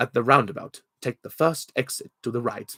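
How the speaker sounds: recorded navigation prompt announcement voice. Speaker demonstrates the voice they were paid to record for a sat nav, sat nav voice. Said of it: "I had to sound a bit like this".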